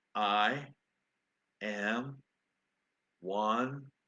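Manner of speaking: very slow, each syllable set down like its own word. Quoting a man whose tongue couldn't work any faster, very slow and careful. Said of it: "said very slowly and very carefully".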